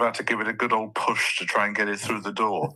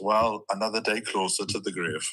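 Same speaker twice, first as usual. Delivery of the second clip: normal talking voice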